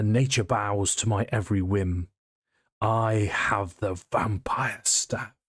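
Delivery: raspy, rasping voice calling out. Voicing a figure calling out instructions in Druidic: rasping voice. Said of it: "you hear in this rasping voice".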